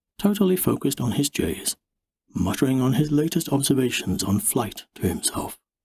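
ordinary delivery, nothing marked

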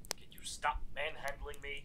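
soft, unvoiced, annoyed whisper.

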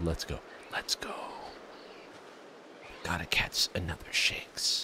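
soft, breathy whisper under the breath. Retelling how they just whispered while sneaking: retelling a whisper. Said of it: "I whispered".

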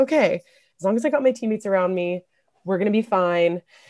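ordinary talk, nothing marked

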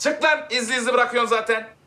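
yelling high and loud.

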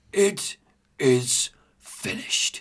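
weak, breathy, gasped whisper. Retelling a game scene where a dying character speaks: gasping weakly. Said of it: "he gasps".

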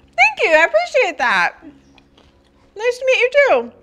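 talking through mouthful of food. Greeting someone while eating: talking with mouth full. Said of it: "I'm like talking with my mouth full".

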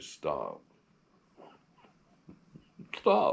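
firm, stern, rough classroom teacher voice. Showing how a teacher stops two students fighting, in a teacher's voice. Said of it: "use your teacher's voice and say".

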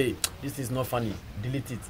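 ordinary talk, nothing marked

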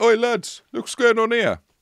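very high, loud, calling-out voice. Speaker retells a man pretending to call to his companions, retelling calling out. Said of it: "the man called out as if to his companions".

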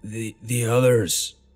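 hoarse whisper. Reading a story aloud, the narrator waking in a hospital bed: hoarse whisper. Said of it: "I whispered back in a hoarse voice".

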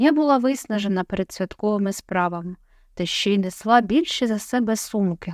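ordinary delivery

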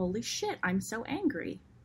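very calm, perfectly composed tone. Telling how someone ran off with an idea, very calm. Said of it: "she said very calmly".

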